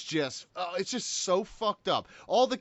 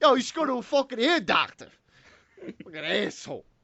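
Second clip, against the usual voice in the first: put-on strong, thick New York accent; 3 semitones higher than usual. In an episode bit done in accents, a cast member speaks in a thick new york accent. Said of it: "will have thick New York accents".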